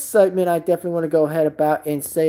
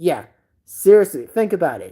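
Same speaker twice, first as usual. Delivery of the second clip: ordinary delivery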